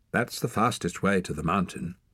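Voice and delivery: plain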